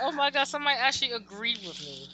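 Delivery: ordinary delivery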